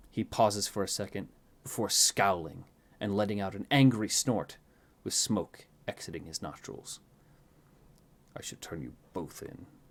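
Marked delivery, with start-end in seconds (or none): 8.3-9.6 very soft, hushed mutter under the breath. A narrator reads a scowling figure's line, muttering under his breath. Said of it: "he mutters under his breath".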